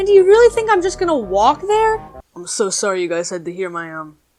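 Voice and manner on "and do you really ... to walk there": put-on girl voice, pitched way up and loud. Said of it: "my real, unaltered voice".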